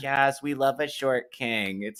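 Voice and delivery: insincere, gushing, high, drawn-out, fake sincere. Imitating people who call short men short kings: imitating a fake lying voice. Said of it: "they're using their lying voice".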